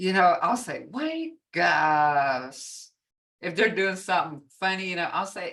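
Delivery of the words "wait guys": humorous, playful sing-song with swooping pitch. Showing how they call to a group when something funny happens, humorous tone. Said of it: "kind of got this humorous tone to it".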